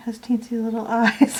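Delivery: voiced hush in stage-whisper style. Murmuring to yourself while painting something small, and you can't say why you're keeping your voice down. Whispering. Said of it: "I don't know why I'm whispering".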